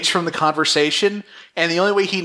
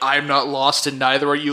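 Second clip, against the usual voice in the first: deadpan, flat robot voice, lower pitch; 4 semitones lower than usual. Describing how a man talks, quoting him in a deadpan robot voice. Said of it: "he speaks in this deadpan robot voice".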